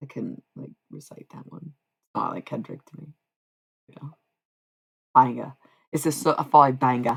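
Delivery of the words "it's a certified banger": put-on British accent sounding Australian, louder. Saying a phrase in a put-on British accent that comes out too Australian. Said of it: "the first one sounded too Australian".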